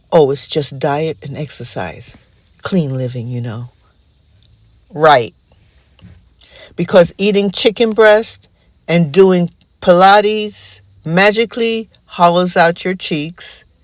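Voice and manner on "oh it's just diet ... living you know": put-on whisper, lower and quieter. Imitating a publicist explaining a celebrity's new look: imitating a quiet whisper. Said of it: "the publicist quietly whispers".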